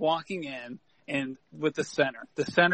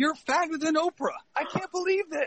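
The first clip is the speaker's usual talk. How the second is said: very high acted screaming tirade, abusive and loud; 13 semitones higher, 4 dB quieter than usual. Retelling a coach punting balls at a player: imitating the coach screaming. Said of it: "screaming stuff like".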